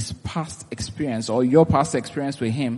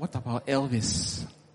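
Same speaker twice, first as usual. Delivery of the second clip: put-on whisper, quieter; 10 dB quieter than usual. Acting out the devil slyly raising a doubt: imitating a whisper. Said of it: "And then he whispers".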